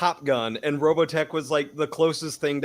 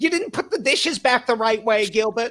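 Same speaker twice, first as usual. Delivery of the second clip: high, raised-pitch, angry nagging woman's voice; 8 semitones higher, 4 dB louder than usual.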